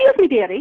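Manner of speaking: put-on very cheery British accent. Retelling a voice heard while alone with eyes closed, imitating a cheery british voice. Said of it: "in a very cheery British accent".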